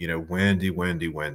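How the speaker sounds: plain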